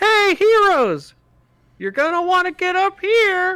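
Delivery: tiny, very high, small faraway voice calling out. Game master voicing someone calling to the heroes from high up; small voice calling out. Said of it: "a small voice calls out and says".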